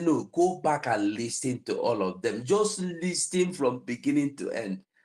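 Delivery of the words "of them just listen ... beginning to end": ordinary talk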